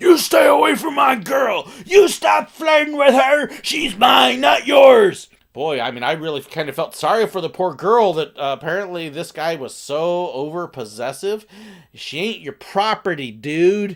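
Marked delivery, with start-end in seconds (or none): 0.0-5.3 mock man's voice, very loud, high, angry shout. Retelling how the man sitting beside a woman reacted to the speaker's bit; imitating an angry man. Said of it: "The guy sitting next to her got mad".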